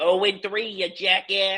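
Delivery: put-on, laid-on Boston accent, slow and high. Retelling rude phone calls from boston fans: imitating a boston accent. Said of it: "with that stupid ass accent".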